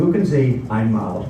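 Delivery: normal talking voice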